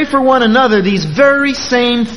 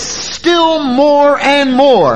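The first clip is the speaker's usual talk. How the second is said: "still more and more" stressed, high, slow, drawn out. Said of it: "Paul piles words on top of words".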